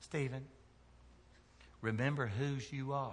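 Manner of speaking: put-on soft, sweet little southern mama accent. Quoting the speaker's mother whenever the speaker left the house as a teenager: sweet southern voice. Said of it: "in a little sweet southern voice".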